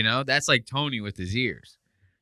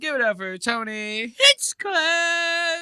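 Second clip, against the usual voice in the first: squeaky, very high, slow, stretched-out, drawn-out squeak. Retelling how an announcer's line came out with a little squeak. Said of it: "coming in with a little squeak".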